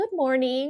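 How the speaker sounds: put-on sweet motherly voice. Retelling how mom greets her on the phone: imitating mom's sweet greeting. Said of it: "She's like".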